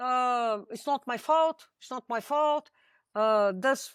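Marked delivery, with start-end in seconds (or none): none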